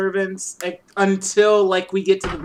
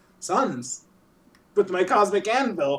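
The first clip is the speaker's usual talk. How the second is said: casual, offhand, nonchalant tone. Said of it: "He's like".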